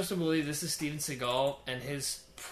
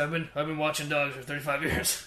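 put-on mumbled whisper voice. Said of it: "He's like".

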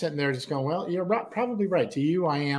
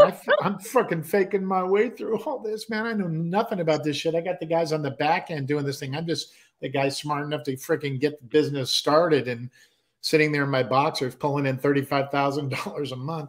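usual speaking voice

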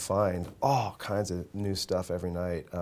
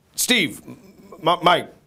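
put-on fed-up dad yell, very high, loud, drawn-out; 10 semitones higher, 9 dB louder than usual. Retelling how his father mixed up names: imitating an annoyed father. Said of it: "he would get pissed and he'd be like".

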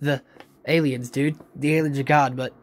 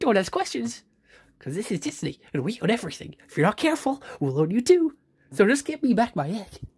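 snippy, rude, high, swooping cartoon mouse voice; 6 semitones higher than usual. Mickey Mouse answers a companion's questions about his missing egg; rude Mickey Mouse voice. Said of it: "don't need to be so rude about it".

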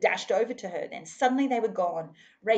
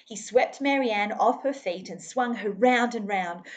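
usual speaking voice

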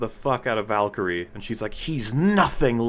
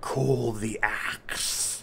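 whispery, spooky voice, much slower; 5 dB quieter than usual. Describing a character attacking people, imitating his whispery spooky voice. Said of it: "his, like, whispery, spooky voice".

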